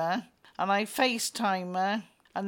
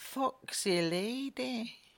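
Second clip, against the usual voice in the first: a touch of put-on Scottish accent; 3 semitones higher, 5 dB quieter than usual. Repeating a joking phrase after praising the accent: put-on scottish accent. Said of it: "I like a Scottish accent".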